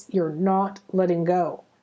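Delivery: strict, stern, no-nonsense tone without anger. Retelling what Metatron said through the teacher, in a mock-stern Metatron voice. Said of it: "really stern, not angry, but stern voice".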